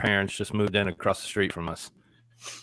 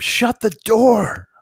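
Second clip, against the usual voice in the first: put-on woman's scream, higher and louder; 14 semitones higher, 11 dB louder than usual. Retelling how a wife screamed at a child: imitating wife screaming.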